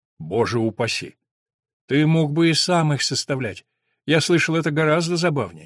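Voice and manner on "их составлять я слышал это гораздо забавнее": plain reading voice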